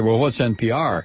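plain

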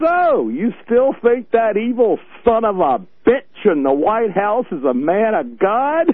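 acted, loudly projected speech through clenched teeth. Speaker retells confronting a man while patting his back, retold loud stage voice, gritted teeth. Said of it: "in my loudest stage voice, Gritted teeth".

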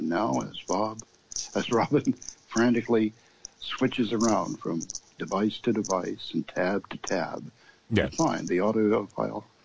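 hushed, soft golf commentary announcer voice. Host narrates his own hunt for an audio file, in a quiet golf announcer voice. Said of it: "golf announcer voice and in quiet tone say".

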